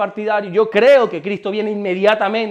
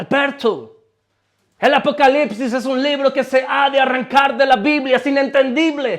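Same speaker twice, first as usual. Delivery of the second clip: put-on American accent on Spanish words, pitched up; 5 semitones higher than usual. Retelling what the Bible institute teacher used to say: imitating an American accent. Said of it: "hablaba siempre con ese acento gringo".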